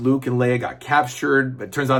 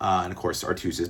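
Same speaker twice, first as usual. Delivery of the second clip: usual speaking voice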